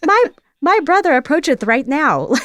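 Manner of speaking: put-on little girl voice. Imagining how she actually sounded, in a tiny little girl voice. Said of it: "like like this like tiny little girl voice".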